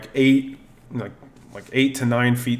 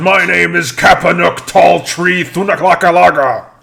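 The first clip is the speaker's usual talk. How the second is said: put-on giant voice, pitched much higher than normal; 7 semitones higher, 10 dB louder than usual. Narrating a story, the speaker voices a freed giant introducing himself in a loud Kapanuk voice. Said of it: "so loud".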